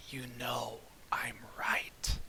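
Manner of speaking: slow, soft whisper under the breath. Voicing a character who taunts the party: whispering in character. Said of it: "she just whispers".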